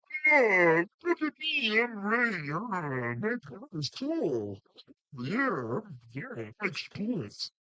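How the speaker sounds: high, swooping celebrity-style voice, pitch swinging around. After another speaker mentions working with Ray Romano, the speaker shows off a Ray Romano impersonation. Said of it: "That's my Ray Romano impersonation".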